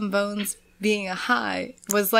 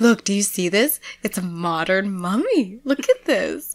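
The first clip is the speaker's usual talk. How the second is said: put-on excited talking. Retelling a TV scene, the speaker acts out a woman addressing Zach: imitating excited chatter. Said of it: "when she's so excited".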